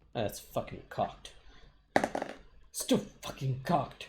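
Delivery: angry muttering in a whisper. A player reacts to an attack roll in a tabletop game, sounding angry. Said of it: "Why do you sound so".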